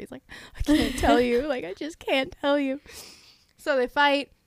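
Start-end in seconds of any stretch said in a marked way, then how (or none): 0.6-2.8 angsty, pained, agonized, tortured, anguished voice. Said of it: "He's just so tortured".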